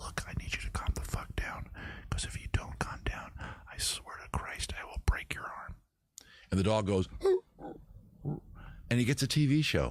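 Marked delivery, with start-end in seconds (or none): 0.0-5.8 soft, voiceless, threatening whisper. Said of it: "That's what he's whispering".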